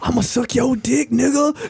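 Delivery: voiced stage whisper. Retelling a scene from a show: imitating a half-whisper. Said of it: "whispering in the other, in his other ear".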